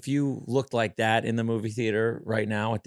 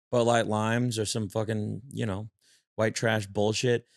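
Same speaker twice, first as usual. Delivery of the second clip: ordinary talk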